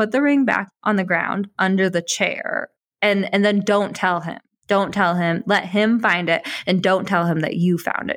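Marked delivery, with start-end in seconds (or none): none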